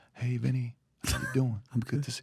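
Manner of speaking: very soft, quiet, gentle, soft-spoken voice. Recalling the man called the GOAT joining the unit: imitating the GOAT's soft voice. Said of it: "he talks like this. ... He just talks very soft".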